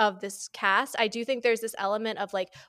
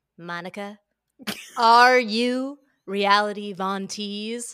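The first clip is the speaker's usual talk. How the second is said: loud, slow, deadly serious delivery; 6 dB louder than usual. Imitating Andy asking Monica a question: imitating Andy Cohen's serious tone. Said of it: "serious tone Andy has ever produced".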